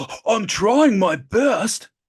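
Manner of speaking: high, loud delivery with every word drawn out. Acting out a scene from The Rock for a friend: Nicolas Cage impression. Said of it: "It's Nick Cage talking".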